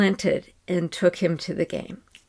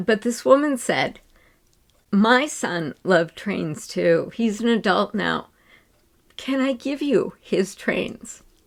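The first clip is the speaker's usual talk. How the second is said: moved, heartfelt, emotional voice. Telling about a stranger's kindness to their son, getting emotional. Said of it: "I'm getting kind of emotional".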